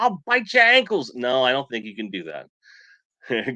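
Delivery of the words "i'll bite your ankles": very high, loud Australian accent. Joking about whether a toy figure's legs can be removed: Australian accent. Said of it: "Great Australian accent".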